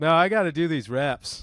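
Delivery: ordinary talk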